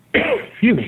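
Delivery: high, slow, choked-up voice after a cough. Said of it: "Got a little choked up there".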